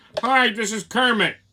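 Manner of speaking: slow, dazed delivery. Mocking the replacement puppet voice in the new movie: imitating the new Kermit the Frog voice.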